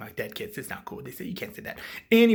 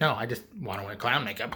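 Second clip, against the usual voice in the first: plain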